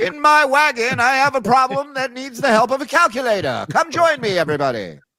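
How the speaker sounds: put-on, very high carnival barker spiel. Mocking someone doing a math problem: put-on carnival barker voice. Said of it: "like a carnival barker trying to drum up business".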